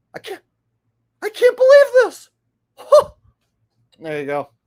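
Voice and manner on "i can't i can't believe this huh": put-on shocked streamer reaction voice, higher, louder. Showing how the named streamer would react to the news: Asmongold impression. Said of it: "Ass Mongol's reaction to that is gonna be this".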